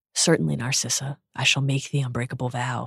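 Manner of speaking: softly spoken. Reading a man's reply to a woman in a story, quiet. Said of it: "he said quietly".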